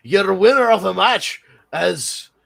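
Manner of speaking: imitated Scottish accent. Imitating a wrestler on the microphone: imitating a scottish accent. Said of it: "she's Scottish, so it's like".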